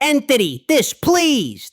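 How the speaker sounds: sudden put-on yelled scream. Retelling a distraction move thrown at an opponent: retelling own scream. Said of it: "I screamed".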